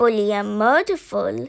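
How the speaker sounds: ordinary delivery, nothing marked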